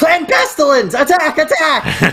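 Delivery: yelled put-on rodent voice. Acting out a Skaven ambush cry in the game: yelling in Skaven impression. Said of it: "yell out in my best Skaven impression".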